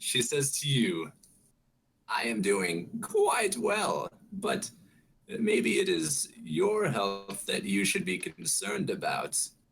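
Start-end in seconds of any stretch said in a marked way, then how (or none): 2.1-9.4 put-on high, swooping elderly woman voice. Game master voicing an old lady who speaks to a player: old lady voice. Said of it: "My name's an old lady".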